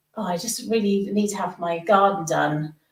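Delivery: ordinary talk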